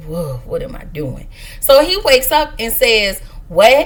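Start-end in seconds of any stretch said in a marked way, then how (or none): 0.0-1.3 acted mumble under breath, lower and quieter. Retelling what she said on entering the room, mumbling under her breath. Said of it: "She mumbles under her breath".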